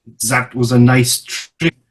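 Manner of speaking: mumbled, half to itself. Game master voices an entity reacting to a player's trick, muttering.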